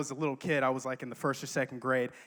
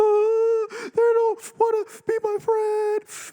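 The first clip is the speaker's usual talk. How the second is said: very loud, very high blubbering wail, ugly crying; 8 dB louder than usual. Retelling how he cried to his mom, imitating ugly crying. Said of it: "I was ugly crying".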